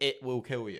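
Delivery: ordinary talk, nothing marked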